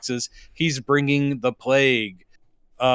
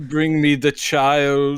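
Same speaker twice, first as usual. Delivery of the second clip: put-on slow, deliberate, drawn-out childlike voice. Quoting his Mandalorian role after praising an impression: Werner Herzog impression. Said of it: "Tompkins' impression of him".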